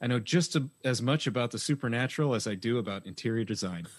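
ordinary delivery

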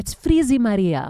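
put-on scolding Greek accent. Speaker remembers her mother and quotes her: mom's Greek accent. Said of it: "my mom would say in her Greek accent".

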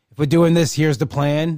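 ordinary delivery

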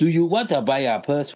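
put-on accent from Africa. Mocking an actor's bad Jamaican accent that came out African. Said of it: "his accent was African".

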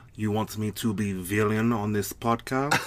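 put-on Russian-accented English. Agreeing to play the villain on a podcast, in a Russian accent. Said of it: "That was a really great Russian accent".

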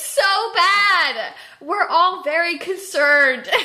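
loud, high speech through laughter, badly stretched. Reacting to someone's bruises, laughing while speaking. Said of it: "I can't stop laughing".

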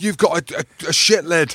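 stuttering over "a". Retelling a comeback to a fan: imitating own stammering. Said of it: "stuttering and stammering".

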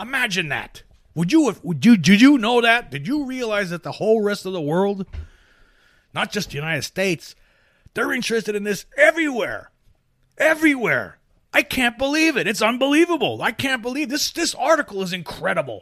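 very high, swooping, fake sarcastic astonishment. Reacting to a news article about UFO interest: sarcastic mock amazement. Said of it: "You know I'm being sarcastic".

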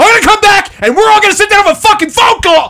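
very high-pitched screaming. Retelling a dispute over a charge, the speaker re-enacts screaming a threat. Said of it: "and I don't stop screaming".

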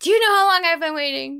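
cranky little old man voice, mock-yelling like a cat. Acting out the cat at feeding time, imitating Farouk yelling. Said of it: "he just yells and yells like".

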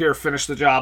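ordinary talk, nothing marked

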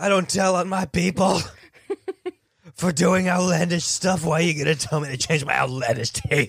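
very loud, high-pitched screaming, ranting delivery. Playing Tom Cruise yelling at the dentist over his tooth: Tom Cruise impression screaming. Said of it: "I'm Cruise".

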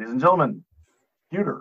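put-on strip club MC voice. Joking about a cheap local strip club, put-on strip club announcer voice. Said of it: "you'd be a good, uh, announcer at the strip club".

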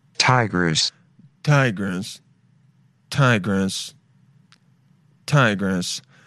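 put-on very deep, very slow, dragging old synthesized computer voice. Reacting to an ad, one host repeats the name in an old computer voice. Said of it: "That that old computer voice".

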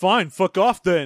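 huffy, sulking, petulant tone. Acting out a character's reply after being refused: imitating a petulant retort. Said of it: "Jetro's response is to get petulant".

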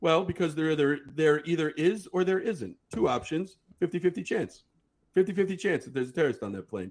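very plain, matter-of-fact delivery. Retelling how the friend explained his number: imitating someone speaking very plainly. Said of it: "he said very plainly".

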